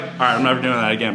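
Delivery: normal talking voice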